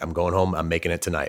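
usual speaking voice

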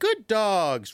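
bright, really happy, high-pitched voice. Showing how to interrupt dogs' play by calling out to them, in a really happy voice. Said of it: "in a really happy, happy voice".

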